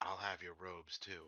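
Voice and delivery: very quiet, half-whispered cartoon duck voice. Leaning uncomfortably close to a man's ear; half-whispered Donald Duck voice. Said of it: "whisper in a very Donald Duck voice".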